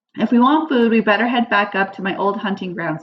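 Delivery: plain reading voice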